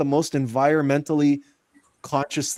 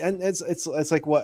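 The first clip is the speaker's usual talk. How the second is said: normal talking voice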